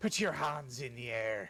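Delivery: put-on pirate voice. Acting out pirates robbing somebody at gunpoint: pirate voice. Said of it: "They hold their guns up and they say".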